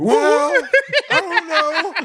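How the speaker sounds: high, laughing put-on woman voice.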